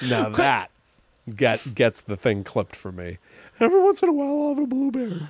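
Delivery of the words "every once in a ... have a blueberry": voice gone very high and quick. Repeating the clipped line about blueberries, in a high-pitched imitation. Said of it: "His voice goes all high".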